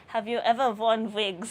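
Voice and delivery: put-on German accent. Retelling a clip, voicing a pretend interviewer's question, in a put-on German accent. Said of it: "putting on a German accent".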